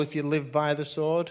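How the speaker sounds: usual speaking voice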